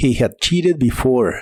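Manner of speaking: ordinary talk, nothing marked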